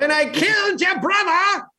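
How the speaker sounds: very high, squeaky cartoon character voice. Recalling the end of a movie, quoting the character in a high-pitched cartoon voice. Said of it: "He starts talking in a high pitched voice".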